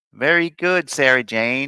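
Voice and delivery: terrible, exaggerated put-on Chicago accent. Voicing what Jim says to Sarah Jane, bad Chicago accent as Jim. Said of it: "Jim says in a Chicago accent".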